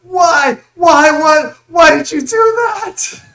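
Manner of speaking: very high, very loud, shrill pained howling. Voicing a man whose foot was just blasted off: screaming in pain. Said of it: "so he screams out".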